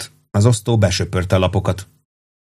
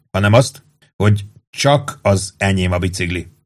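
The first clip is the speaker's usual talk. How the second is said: usual speaking voice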